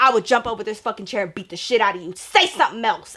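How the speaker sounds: mock-enraged, furious tone. Recounting a confrontation at the movies, retelling a furious threat. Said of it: "I'm like a rabid dog".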